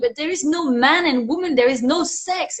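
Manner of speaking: put-on emphatic, matter-of-fact tone, as if obvious. Retelling what a girl in a high school class said, imitating someone saying it loudly. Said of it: "saying it very loudly".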